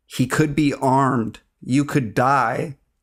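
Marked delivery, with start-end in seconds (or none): none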